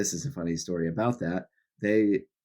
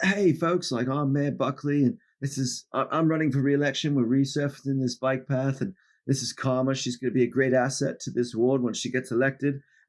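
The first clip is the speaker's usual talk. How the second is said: put-on Australian accent, pitched up high; 7 semitones higher than usual. Retelling how the mayor introduced a council candidate on the bike path; Mayor Buckley's Australian accent. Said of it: "Australian accent".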